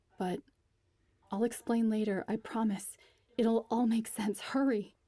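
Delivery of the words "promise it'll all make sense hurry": ordinary delivery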